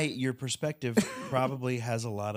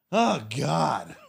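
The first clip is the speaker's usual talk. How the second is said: loud, rough, mock drowsy half-asleep outburst; 3 semitones higher, 6 dB louder than usual. Mocking the listener for dozing off during the movie, a mock half-asleep outburst. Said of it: "you were s- asleep in the movie. And you were like this".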